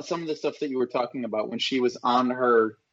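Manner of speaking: plain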